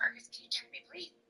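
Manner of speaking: put-on quiet whisper. Showing how they quietly talk to Fergus in public: imitating a whisper. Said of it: "I whisper".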